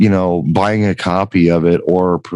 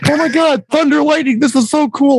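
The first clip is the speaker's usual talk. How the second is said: play-acted, very high, gushing overexcited freak-out. Retelling how someone reacted to thunder and lightning, imitating someone freaking out. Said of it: "was like freaking out".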